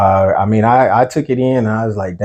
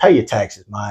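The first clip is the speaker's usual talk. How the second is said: put-on radio disc jockey on-air voice. Announcing a line in a put-on DJ voice: DJ voice. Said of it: "I'm gonna say this in my D J voice".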